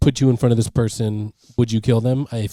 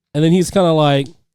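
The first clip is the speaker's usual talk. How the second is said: ordinary delivery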